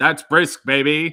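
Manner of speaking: loud, punchy delivery.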